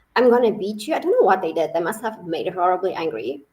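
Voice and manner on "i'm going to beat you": plain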